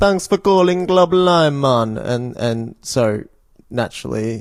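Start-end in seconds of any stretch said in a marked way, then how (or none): 0.0-2.0 badly done, pitched-up fake Caribbean accent. Retelling a business's phone answering message: imitating a bad Caribbean accent.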